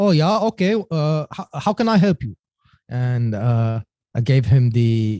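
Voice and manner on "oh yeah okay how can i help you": put-on thick German man's accent, much higher pitch. Retelling a phone call to a man he was referred to: Norbert's thick German accent. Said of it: "Thick German accent, the thickest that you could ever imagine".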